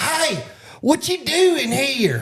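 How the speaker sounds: very high, very slow, drawn-out hollered call. Retelling what two boys hollered at a stranger: imitating kids hollering. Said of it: "They was hollering at me".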